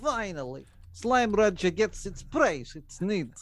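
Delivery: high, put-on fake Russian accent. Imitating a Russian listener cheering for the game: put-on Russian accent. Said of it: "Only a Russian accent".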